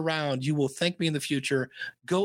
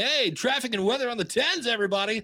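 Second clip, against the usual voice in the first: put-on radio DJ announcer voice, pitched up; 6 semitones higher than usual. Saying you don't need a radio voice, doing a put-on radio announcer voice. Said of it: "you don't have to have a radio voice. You know, you don't have to sound".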